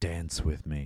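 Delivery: low, hushed, husky, seductive voice. Retelling a scene to Trav, quoting a woman's line in a husky voice. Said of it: "I sounded so husky when I said that".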